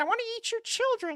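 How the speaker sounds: very high, squeaky put-on boxer voice, way up. Quoting a famous line, then asking if the others liked it: Mike Tyson impression. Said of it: "you like that impression?".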